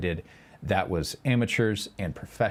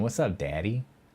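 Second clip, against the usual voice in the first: put-on twang. Showing chat how to say Daddy, with a twang. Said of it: "Get the twang going".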